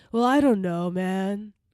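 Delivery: put-on American surfer-dude accent. Discussing District Nine, quoting a character in a surfer-guy accent. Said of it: "it kind of to me sounds like a surfer guy accent".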